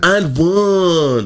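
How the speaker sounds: very high, loud, zesty belt, end stretched. Imitating a basketball player speaking on the court: zesty Karl-Anthony Towns impression. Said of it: "That's how he talks".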